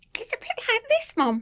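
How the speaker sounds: very high, squeaky little dog voice. Asked what Duncan the grumpy dog sounds like, answering in his squeaky voice. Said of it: "It's squeakier than you would think".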